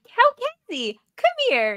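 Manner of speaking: very high, swooping sing-song calling voice. Retelling how a contestant called someone over: imitating a mom calling the dad over. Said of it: "like, a mom calling".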